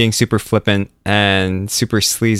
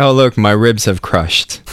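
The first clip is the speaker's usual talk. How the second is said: usual speaking voice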